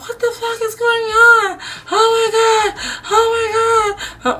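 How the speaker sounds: mock-panicked voice. Retelling how a woman who came to the door reacted, imitating someone panicking. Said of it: "Like panicking".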